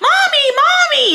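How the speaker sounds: mock kids' screaming, very high. A worker retelling a customer at the window whose kids kept screaming, imitating screaming kids. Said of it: "her kids are still screaming".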